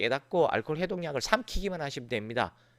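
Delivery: ordinary talk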